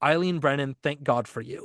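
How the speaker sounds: ordinary talk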